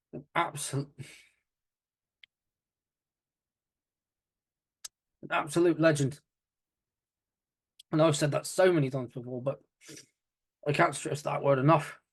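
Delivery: on the verge of tears. Paying tribute after a legend's death, trying not to tear up. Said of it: "I'm trying not to tear up".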